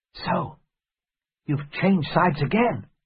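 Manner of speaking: theatrical whisper. Narrator, as Jim, speaks to Silver after being handed a pistol: half-whispering. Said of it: "I couldn't help whispering".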